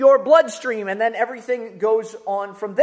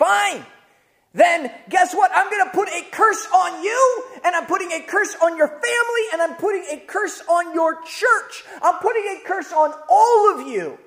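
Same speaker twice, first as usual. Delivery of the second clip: mock out-of-control, enraged, pitched-up tirade; 6 semitones higher than usual. Retelling how a man just lost it at the speaker: retelling an enraged outburst. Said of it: "the guy just loses it and he says".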